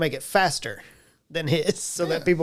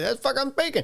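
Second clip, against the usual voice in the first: put-on very high voice with heavy, thick Cajun accent; 9 semitones higher than usual. Recalling his character's usual reply when asked what language he spoke: thick Cajun accent. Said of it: "His response was usually".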